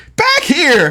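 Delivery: put-on voice pushed very high. Retelling a picture of Charlie pointing at yarn: Charlie impression. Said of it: "It's my best Charlie impression".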